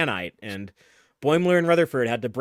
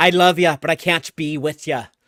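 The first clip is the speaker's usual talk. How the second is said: loud, bad, cheesy stage-Irish romantic-lead accent; 5 dB louder than usual. Mocking a romantic Irish figure from Voyager episodes: bad stereotypical Irish accent. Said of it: "like Irish romantic figure".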